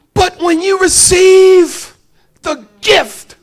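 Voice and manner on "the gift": loud, high, tearful cry of joy. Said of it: "I got tears in my eyes".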